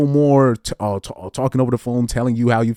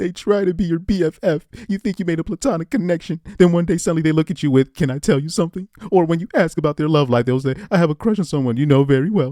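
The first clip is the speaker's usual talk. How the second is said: high, girly put-on voice; 6 semitones higher than usual. Describing how certain guys act toward a friend, in a girl voice. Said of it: "I'm trying to do the, the, the girl voice".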